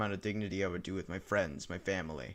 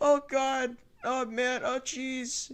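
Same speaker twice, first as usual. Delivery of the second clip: very high, slow, drawn-out raised voice; 6 dB louder than usual. Recalling a bit from one of his videos, the speaker does a Morty impression. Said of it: "I did like a Morty impression".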